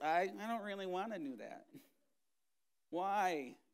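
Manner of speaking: whiny, reluctant, little whining voice. Acting out a reluctant response to God's word, mock whining voice. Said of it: "with that little whining voice thing going on".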